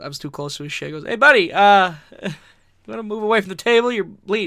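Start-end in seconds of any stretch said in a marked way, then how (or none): 1.0-4.5 very loud, pitched-up yell. Retelling being told to move away from a merch table: imitating someone yelling. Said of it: "yelled at me".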